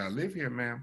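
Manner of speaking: hushed, soft voice kept low. Retelling a late-night reply to a shouting officer: imitating speaking quietly.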